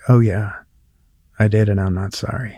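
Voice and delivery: mock indignant, affronted, unapologetic tone. Retelling how the heckler answered when confronted: imitating an indignant reply. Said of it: "she got indignant with me and was like".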